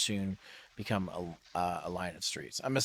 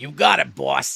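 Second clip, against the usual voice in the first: loud, rough cabbie voice; 6 semitones higher, 13 dB louder than usual. Narrating a taxi ride, the speaker voices the driver: stereotypical taxi driver voice. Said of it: "stereotypical like taxi driver voice".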